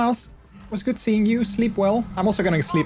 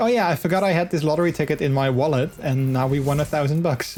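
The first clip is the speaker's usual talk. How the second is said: ordinary talk, nothing marked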